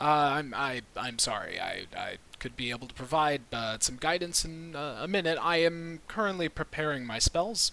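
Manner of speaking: awkward, halting, stumbling mumble, ill at ease. Narrating a scene, voicing Halifax's reply: awkward mumbling. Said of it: "has this very awkward look on his face and mumbles".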